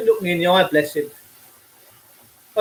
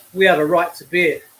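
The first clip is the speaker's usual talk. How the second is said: ordinary delivery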